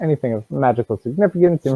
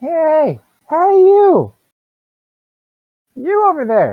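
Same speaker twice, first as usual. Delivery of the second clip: very high, loud little gnome yelling voice; 6 dB louder than usual. A game master voices a gnome calling from the bar to the players; little gnome voice. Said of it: "This little gnome does not like you".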